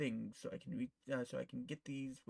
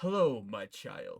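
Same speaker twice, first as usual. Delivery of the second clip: deep, very loud booming voice; 3 semitones lower, 10 dB louder than usual. Voicing the god Aquarium greeting the player: Aquarium's deep booming voice. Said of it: "Aquarium says in a deep, bow-, bowing voice".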